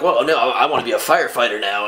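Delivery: ordinary delivery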